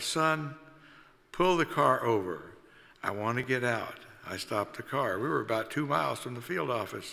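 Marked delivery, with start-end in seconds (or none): none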